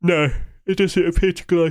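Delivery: speaking through a yawn. Speaker checking whether something glows at nighttime, yawning while speaking. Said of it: "Sorry for yawning".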